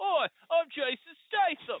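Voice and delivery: put-on Boston accent. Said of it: "Jason Statham playing someone from Boston is like".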